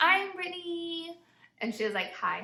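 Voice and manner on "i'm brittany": high, extra, overdone, over-the-top hello. Retelling saying hi to a fellow parent for the first time: retelling own extra voice. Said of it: "in my extra voice".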